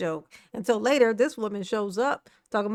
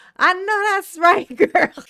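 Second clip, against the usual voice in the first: loud, high-pitched, hyped-up egging-on cheer; 8 semitones higher, 7 dB louder than usual. Imitating Trina cheering on bad behaviour: imitating Trina hyping. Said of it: "talking about some".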